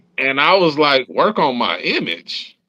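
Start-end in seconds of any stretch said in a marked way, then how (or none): 1.1-2.5 indignant, affronted, slow and swooping. Retelling answering a record label's call: imitating own offended question. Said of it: "I'm kinda offended".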